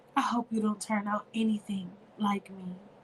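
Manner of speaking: soft half-whisper on a sigh. Narrator reading Erica's words to the child drifting off to sleep, sighing half-whisper. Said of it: "sighed as she whispered".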